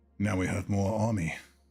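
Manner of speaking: low whisper. Whispering to a mace while walking out of a fight: whispering in character. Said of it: "I'm gonna whisper to the mace".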